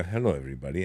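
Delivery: Indian accent with a rolling, swaying flow. Explaining to a friend how to do an accent properly, acting out a greeting in an imitated Indian accent. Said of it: "You can't just do an Indian voice like".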